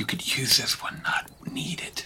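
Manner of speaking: very quiet, conspiratorial, leaning-in whisper. Leaning in to a fellow character at the table, whispering. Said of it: "lean in and whisper to Finn Martin".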